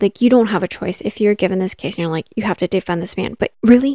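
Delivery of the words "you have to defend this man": ordinary talk, nothing marked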